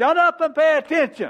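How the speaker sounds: loud oil field voice. Showing how he told people in life-and-death situations to listen, in oil field voice. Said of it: "I know I still have my oil field voice".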